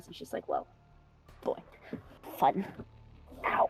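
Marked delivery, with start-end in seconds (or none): 0.5-2.6 mumbled, whispered mutter under the breath. Voicing a character looking over the items in a game: muttering to herself. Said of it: "She mutters to herself".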